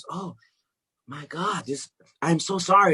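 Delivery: put-on, high, slow voice on the edge of crying. Retelling a father's apology on the phone: imitating someone almost crying. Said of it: "he almost starts crying".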